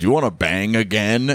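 deep, low woman's voice. Retelling what a woman asked him as he was leaving: impression of her deep voice. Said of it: "she had a like a kind of deep voice ... i'm just doing an impression of her".

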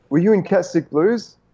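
alarmed, all-panicked tone. Retelling a lady who ran into a fruit shop: imitating a panicked woman. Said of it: "all panicked and red-faced".

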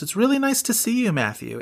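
very high, hopeful, slightly stiff, stilted reading. Retelling a hospital scene line to Ben Stiller: imitating Elizabeth Marvel, hopeful, slightly stilted. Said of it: "in this very kind of hopeful but slightly stilted way".

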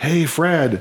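acted-out high yell at the top of his lungs. Retelling a colonist calling across a field to Fred, retelling a yell. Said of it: "and just yells".

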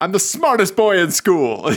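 sitcom-style sassy, full-of-itself bragging voice. Imitating a TV character for a spouse: Schmidt from New Girl voice. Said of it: "Schmidt from New Girl".

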